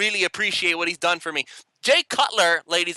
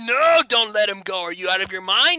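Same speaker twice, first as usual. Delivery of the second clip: mock alarmed, frantic, disbelieving crowd screaming; 3 semitones higher than usual. Imitating rival fans begging the team to keep the coach: imitating fans screaming. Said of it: "Bears fans were screaming at the top of their lungs".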